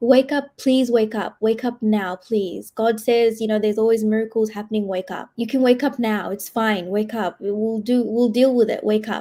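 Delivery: frantic, desperate, begging, pleading voice. Retelling a mother's words at a deathbed: imitating a distraught mother pleading. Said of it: "My mom was, like, losing it".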